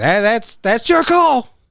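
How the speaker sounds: put-on acted, very high, loud, slurred, stumbling drunk speech. Retelling what a drunk character said in the bathroom: imitating a drunk slur. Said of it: "Mister Lindenson drunkenly is like".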